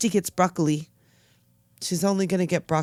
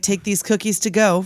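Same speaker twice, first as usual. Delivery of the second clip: plain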